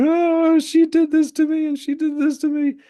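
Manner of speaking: put-on very shrill, very loud tearful crying. Retelling how a girl came to complain: imitating a crying girl. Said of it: "if one girl would come to us crying, like".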